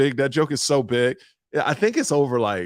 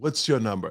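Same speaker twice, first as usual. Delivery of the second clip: put-on haughty, snooty, self-important voice with attitude; 2 semitones lower, 4 dB quieter than usual. Retelling how a lady in the boarding line asked: imitating a lady with attitude.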